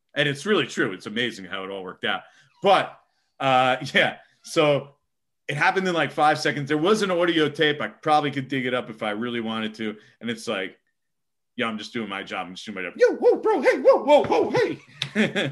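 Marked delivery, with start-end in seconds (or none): 11.7-15.6 very high voice, shooting up and swooping. Retelling being pushed back against a brick wall: retelling in a high voice. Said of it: "and my voice gets real high".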